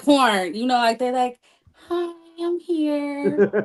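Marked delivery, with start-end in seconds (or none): 1.7-3.5 timid, shy, nervous little voice, pitched up. Describing nervous performers in a clip, imitating a nervous greeting. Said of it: "they all nervous".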